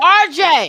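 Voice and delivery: loud hollering yell. Calling out a name to someone on the phone: yelling. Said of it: "Stop yelling".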